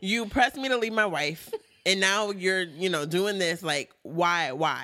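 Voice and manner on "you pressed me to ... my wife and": usual speaking voice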